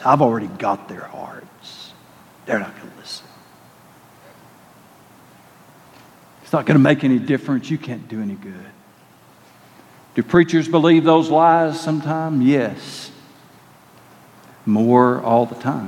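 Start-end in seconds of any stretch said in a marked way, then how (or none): 0.0-8.7 put-on slimy old voice, low and rushed. In a message, acting out the voice he keeps hearing: old slimy voice. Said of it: "You can hear his old slimy voice".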